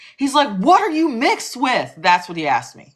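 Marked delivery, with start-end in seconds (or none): 0.6-1.9 put-on high, loud, prying shout. Retelling a stranger screaming a question: imitating a man screaming. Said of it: "he screams at the top of his lungs".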